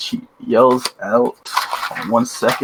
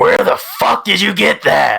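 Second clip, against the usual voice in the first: put-on loud, rasping old man holler; 8 semitones higher, 5 dB louder than usual. Game master voicing an old man yelling at the party: old man yelling. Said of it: "The old man's yelling".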